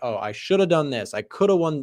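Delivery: ordinary delivery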